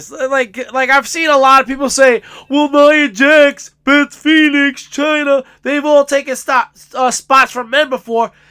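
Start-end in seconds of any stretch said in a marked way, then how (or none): 2.5-8.3 mocking put-on voice. A speaker imitates people he has seen saying this, mocking imitation of critics. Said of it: "Are you imitating me".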